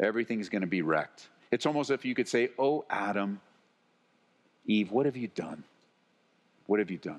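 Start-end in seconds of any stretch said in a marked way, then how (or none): 2.6-7.2 grieving, heartbroken, sorrowful voice. Speaker explaining a Bible passage voices God's words to Adam and Eve: brokenhearted God's voice. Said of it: "hear this in the tone of voice of a brokenhearted God".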